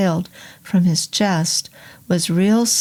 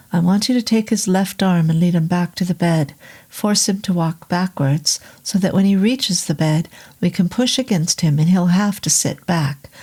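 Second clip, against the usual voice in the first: plain reading voice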